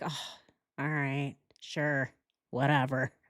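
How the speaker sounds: low, beaten, resigned, defeated tone. Retelling how a woman answered, imitating her defeated voice. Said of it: "She sounds so defeated".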